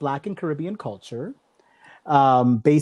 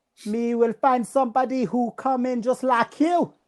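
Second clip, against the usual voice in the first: high-pitched mock British-Jamaican accent. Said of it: "I gotta get British, British slash Jamaican here".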